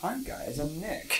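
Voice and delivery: soft, gentle impression.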